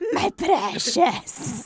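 breathy, whispered character voice. Answering another speaker in character: Gollum voice. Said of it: "Gollum, what do you want?".

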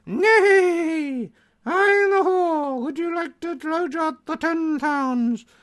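very high braying donkey voice, drawn-out bray. Performing while others comment on it, in a donkey impression. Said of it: "It does a good impression of donkey".

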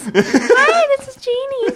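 really high-pitched, swooping voice. Joking about answering calls with Disney names, in a really high voice. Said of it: "Do it in a really high voice".

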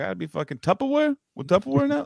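imitated New York accent. Retelling a clip where Chris goes into a New York accent: imitating a New York accent. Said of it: "goes into this fucking, like, uh, New York thing".

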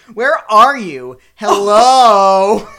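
very loud, very slow, drawn-out, irritated, pissed-off calling. Retelling a scene the speaker wrote, acting out an angry call into the rain. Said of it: "she's so pissed".

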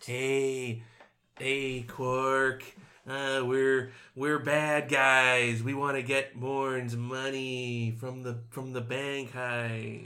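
very slow, lingering delivery, hey stretched long. Imitating a bad guy from an episode who talks to Quark: Jack Nicholson voice. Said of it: "Why does he sound like Jack Nicholson?".

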